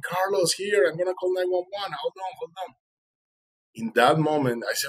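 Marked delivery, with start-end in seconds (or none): 0.0-2.7 acted high-pitched shout, as if across a distance. Retelling a friend shouting from the hilltop: imitating a friend screaming from afar. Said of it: "So he started screaming".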